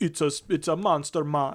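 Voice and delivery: terrible put-on Jamaican accent. Retelling what a gang boss in a movie says: bad jamaican accent. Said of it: "It's like the worst Jamaican, like, bullshit accent ever".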